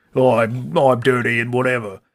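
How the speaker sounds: heavy put-on Cockney accent, goofy caveman voice. Joke about how goofy a prehistoric person sounds, in a Ray Winstone Cockney impression. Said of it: "more like Cockney".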